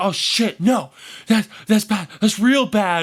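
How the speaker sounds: freaked-out voice.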